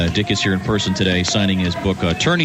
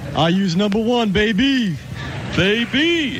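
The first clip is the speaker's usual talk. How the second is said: put-on sportscaster voice, higher; 12 semitones higher than usual. Entering a sound-alike contest on stage: Dick Vitale impression. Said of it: "a nice Dick Vitale impression".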